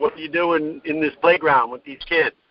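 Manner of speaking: ordinary talk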